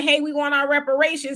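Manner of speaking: ordinary talk, nothing marked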